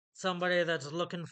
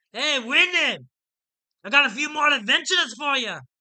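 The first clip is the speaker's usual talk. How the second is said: very loud, high shout, carrying far; 9 semitones higher, 11 dB louder than usual. Narrating a story, voicing a character shouting across a tavern to another. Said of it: "So Tobin shouts across the tavern".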